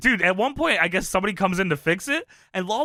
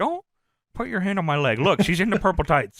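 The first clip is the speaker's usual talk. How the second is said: plain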